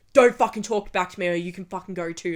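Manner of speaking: loud, furious, angry security guard voice, acted. Retelling how security reacted when questioned: imitating an angry guard. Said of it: "they would get so fucking pissed off".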